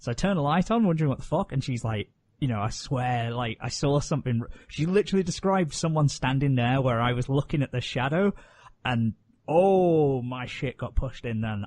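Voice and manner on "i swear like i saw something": ordinary talk, nothing marked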